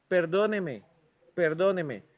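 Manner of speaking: normal talking voice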